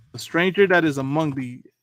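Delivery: ordinary talk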